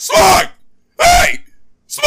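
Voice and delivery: hollering, yelled call-out. Showing the shout avoided when trying to get someone's attention: mock yelling a name. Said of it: "and I don't wanna yell".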